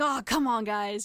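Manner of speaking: very slow, drawn-out, thoroughly fed-up angry tone. Recounting a scene, imitating the collector stomping around all mad. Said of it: "he's stomping around and he's all mad".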